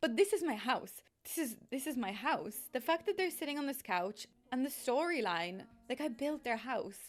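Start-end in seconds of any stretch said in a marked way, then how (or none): 0.0-2.6 emotional voice on the edge of crying, near tears. A youtuber addressing viewers, on the verge of tears. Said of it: "I'm gonna start crying".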